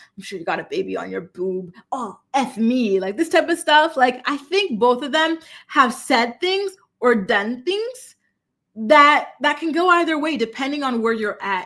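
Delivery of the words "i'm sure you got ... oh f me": low, rough, husky, raspy voice. Speaker quotes a man's voicemail to a woman, imitating a low raspy voice. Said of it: "talking in this low raspy voice".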